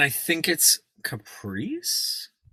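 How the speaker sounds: "caprice" with rising question-mark lilt. Naming the most likable character in a film, question-like rise on 'caprice'. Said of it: "I'm gonna say it with a question mark".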